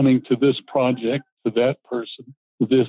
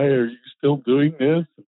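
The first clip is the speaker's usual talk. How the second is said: ordinary talk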